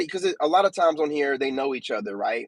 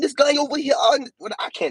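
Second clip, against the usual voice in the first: bad put-on British lady accent, higher pitch; 12 semitones higher than usual. Imitating a British lady who always gets angry: imitating Cleo in a bad British accent. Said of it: "I don't have a good British accent".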